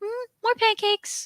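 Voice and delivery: very high-pitched cartoon character voice. Describing a cartoon scene where a dog serves him pancakes, high-pitched cartoon voice. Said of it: "he has like a high pitched voice".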